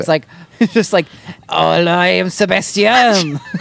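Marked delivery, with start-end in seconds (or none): 1.5-3.4 put-on French accent. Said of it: "it's your French boss doing an accent".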